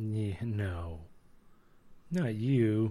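very slow, drawn-out, heavily laid-on sarcastic dismissiveness. Answering another speaker who calls himself snooty: sarcastic. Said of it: "a way higher level of sarcasm".

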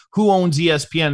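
plain

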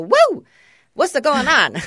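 sunshiny, swooping, very high, very loud, shrill voice. Describing how she'd walk into the house, imitating her cheerful greeting. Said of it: "she always had like a sunshiny personality".

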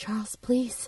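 under the breath. Acting out a woman speaking to charles as he seems about to fight, speak under her breath. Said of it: "she just goes under her breath".

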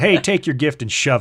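joking rude tone. Reading Daniel's reply to the king as a joke: mock rude tone. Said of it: "that's probably not the tone he used".

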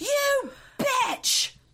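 mock, shrill, very high screeching scream. Retelling a woman screaming from the driver's seat of a car, retelling a scream. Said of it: "she is screaming".

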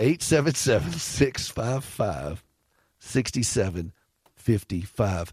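slow, deliberate, slowed-down delivery. Repeating a phone number for callers, saying it slower. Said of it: "I got to say this slower".

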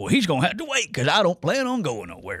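bad Southern Carolina accent with swooping pitch. Imagining what Satterfield would say, do a terrible Scott Satterfield impression. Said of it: "That's a terrible Scott Satterfield impression".

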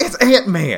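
shouting. Recalling their reaction to something Alexa said, retelling a loud yell. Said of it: "And I yelled".

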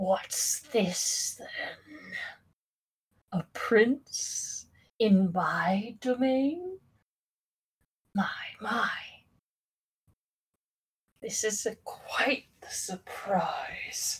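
very slow, hushed drawl of a towering creature. A game master voices a towering creature leaning forward on its throne, giant creature voice. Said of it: "This creature is about 20 feet tall. / his enormous, kind of bony-looking hands on the armrest, / He gets up from the throne, / We banish you from this plane. / and it is going to graze its sword up i".

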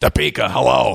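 brusque, gruff late-night radio host voice. Describing how a host greeted lined-up phone callers by city, in a gruff Larry King impression. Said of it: "very gruff handle phone callers".

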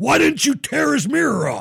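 very high, raspy, rough, angry yelling. Retelling how the gas station owner yelled a question: imitating someone yelling. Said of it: "He's yelling at me".

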